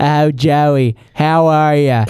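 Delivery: very slow, every single word drawn out. Imitating a very old great aunt's greeting: imitating Aunt Bernadette. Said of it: "she talks like this".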